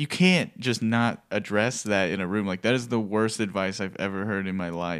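normal talking voice

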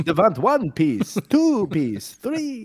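put-on vampire voice. Teasing how another speaker says a name, speaker does a Count from Sesame Street voice. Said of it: "you're the count from Sesame Street".

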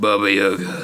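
really deep rasp on both words. Saying a name the way a TV character would: deep raspy Oliver Queen voice. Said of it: "his really deep, raspy Oliver Queen voice".

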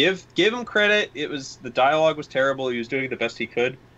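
ordinary talk

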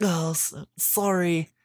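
mock-apologetic put-on voice. Describing a video game character to a co-host, mocking an apologetic character. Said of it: "I'm mocking it".

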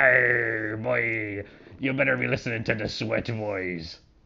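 put-on pirate voice with drawn-out "arr". Doing a joke ad bit with another speaker: pirate voice. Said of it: "the pirates is here".

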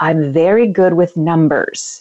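simple, halting broken English phrasing. Retelling what a man's mom in the studio audience said: imitating broken English. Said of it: "kind of in broken English".

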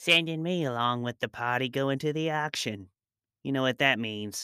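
weaselly, snake-like voice. A man's voice speaks among hushed voices in a courtyard; weaselly, snake-like voice. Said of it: "He sounded like a weasel. Or maybe a snake".

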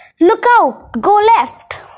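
high, shrill, shrieking screech. A grey lady in the middle of a speeding cab warns the driver: screeching. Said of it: "The grey lady sitting in the middle screeched".

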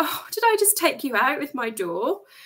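put-on giggling, laughing, swooping sing-song tune. Retelling what a woman who hit her hand with a car door said: imitating someone laughing while talking. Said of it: "she was laughing".

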